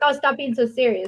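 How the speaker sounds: ordinary delivery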